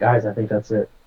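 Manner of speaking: hushed whisper. A player speaks aside to their party members, whispering to the party. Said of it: "I'm gonna whisper to my uh, party".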